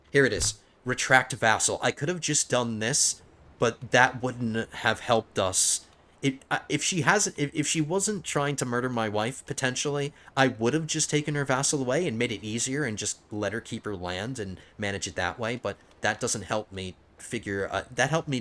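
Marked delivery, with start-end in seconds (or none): 6.3-9.5 tripping over opening "if"s, stammering restarts. Explaining a choice about her vassal, the speaker keeps stumbling: stuttering. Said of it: "I'm stuttering so much today".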